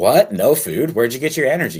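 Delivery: loud, swooping, fake sarcastic surprise and disbelief. Reacting to hearing the other speaker trained fasted: sarcastic mock disbelief. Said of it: "I'm being sarcastic in case".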